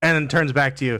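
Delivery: ordinary delivery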